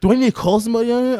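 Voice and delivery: put-on fed-up, angry tone. Retelling an angry customer's complaint about guac: imitating an angry customer. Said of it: "He'd get pissed and more angry".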